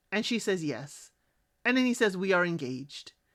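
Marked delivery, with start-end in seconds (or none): 2.1-3.1 low, bone-dry deadpan with no excitement. Retelling how a man announced an engagement, imitating an extra-dry, flat delivery. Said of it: "just like I said it, is how he said it. Extra dry".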